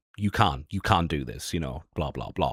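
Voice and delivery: patronizing, condescending, lecturing, talking-down tone. Retelling how a big streamer argued back: imitating someone talking down. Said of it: "talking down to me".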